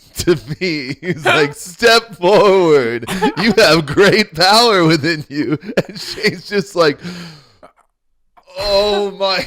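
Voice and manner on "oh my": mock devastated, put-on reaction. Retelling a scene at Ollivander's, the speaker acts out a reaction, imitating Shane, devastated. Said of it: "He's just devastated".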